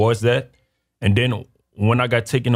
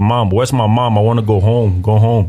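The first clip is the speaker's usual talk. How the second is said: put-on childlike crying, slower; 6 dB louder than usual. Retelling calling for mom outside school as a pre-K child, imitating crying. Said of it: "I was crying like".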